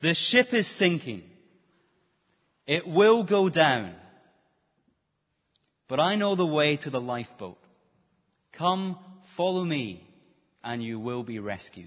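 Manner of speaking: loud, booming delivery. Acting out a Scotsman who comes into the middle of the room, loud voice. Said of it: "in a loud voice says this".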